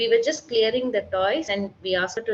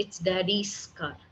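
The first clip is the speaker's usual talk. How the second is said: final s of daddy's strongly stressed; 6 dB quieter than usual. Teaching grammar to a kid, stress on the s of daddy's. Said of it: "This S I want to highlight".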